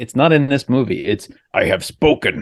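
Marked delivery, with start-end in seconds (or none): 1.5-2.4 words ground out in a gravelly voice. Quoting Nick Nolte's most identifiable line, in a gravelly Nick Nolte voice. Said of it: "with that gravelly voice".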